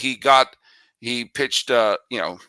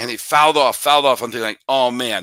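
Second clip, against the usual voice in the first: normal talking voice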